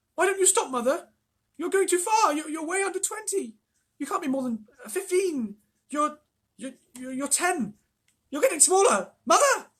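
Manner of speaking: shrill, high alarmed cry. Reading a story aloud, Missus Bucket sees her mother shrinking: shrill alarmed voice. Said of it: "a shrill note of alarm in her voice".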